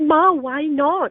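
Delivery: high, slow, drawn-out pleading.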